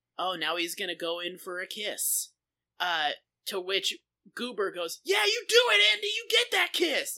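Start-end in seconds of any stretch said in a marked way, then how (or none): 5.0-7.2 put-on very high, shrill, loud shouting. Retelling a scene where a character cheers on a kiss: imitating Goober yelling. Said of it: "just starts yelling".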